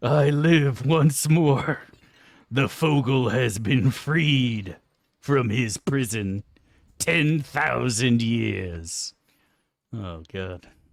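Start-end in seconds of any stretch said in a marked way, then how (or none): 0.0-9.1 very loud, booming, drawn-out top-of-lungs demon roar. Imagining someone climbing out of a pit, yelling like Mal'Ganis. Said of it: "yelling that at the top of his lungs like a fucking Dreadlord, like Mal'Ganis".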